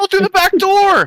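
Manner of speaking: tiny, squeaky, very high yell. A hidden voice yells to the players, in a tiny high-pitched yelling voice. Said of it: "a tiny little high pitched voice yell".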